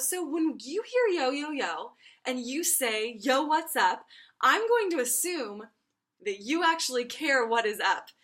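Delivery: put-on nice, playful tone. Retelling what was said to campers: imitating own nice, playful tone. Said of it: "in a nice, playful way".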